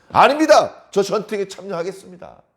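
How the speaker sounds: bold, blustering tone.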